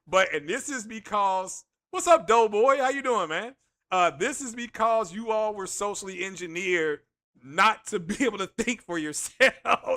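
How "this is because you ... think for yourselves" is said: words fighting off a stifled laugh. Telling viewers why their boycott is failing, holding back a laugh. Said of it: "I'm trying not to laugh here".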